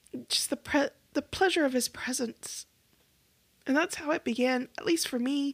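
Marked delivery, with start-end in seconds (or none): 0.3-2.6 words thick with held-back tears, choked voice. Recalling a past experience and becoming emotional: tearing up while speaking. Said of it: "I'm tearing up. You could probably hear it in my voice".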